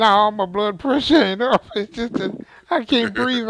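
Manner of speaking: talking through laughter. Answering a question about blood pressure: laughing while talking. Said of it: "I'm laughing so hard".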